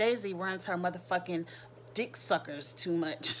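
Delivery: ordinary delivery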